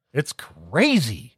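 normal talking voice

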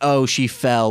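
ordinary talk

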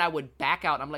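usual speaking voice

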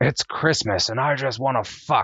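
play-acted, high, screamed outburst. Quoting a movie character's highlight line: retelling a scream. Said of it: "He just screams out".

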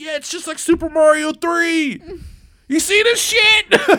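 put-on, very high, loud, overjoyed, gleeful gush. Describing a man playing a game, speaker imitates his happy excitement. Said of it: "He was so happy".

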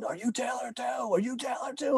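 mock, high, rising drunken yelling and screaming. Retelling a drunk corporal banging on the door at midnight: imitating a drunk corporal screaming. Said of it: "I hear him screaming".

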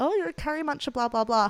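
crude, bad put-on Indian accent. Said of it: "He puts on this shitty fake Indian accent".

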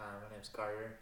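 very soft voice. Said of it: "I'm sorry, I didn't hear you".

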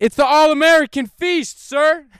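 shouting. Retelling answering a man who can't hear them, retelling a yell. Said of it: "I'm yelling at him because he can't fucking hear me".

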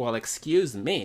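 ordinary talk, nothing marked

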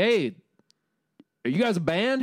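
southern police officer voice. Retelling a traffic stop, quoting the cop who pulled the band over, southern cop impression. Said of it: "this is like a southern cop".

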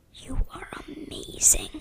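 soft whisper under the breath. Finding a door handle hidden under the dresses: whispered under breath. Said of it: "I whispered under my breath".

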